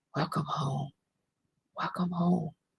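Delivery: barely audible, very quiet half-whisper. Retelling words that came to her in a half-whisper: retelling a half-whisper. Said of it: "That came in a whisper".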